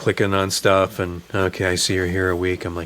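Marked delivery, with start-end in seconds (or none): 1.3-2.7 mock sleepy voice, lower pitch. Retelling a late-night hotel check-in, imitating a sleepy clerk. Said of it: "this woman just kinda sleepily checking me in".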